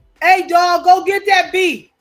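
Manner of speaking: a man's loud, drawn-out holler. Retelling what a passerby shouted during a chase: imitating a man yelling out. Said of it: "this man yelled out".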